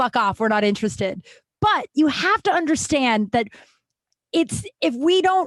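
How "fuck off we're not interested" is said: put-on mean, rude tone, much faster. Describing going to a bar with friends, the speaker acts out their own line, mock-mean. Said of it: "say it in a shitty, mean way".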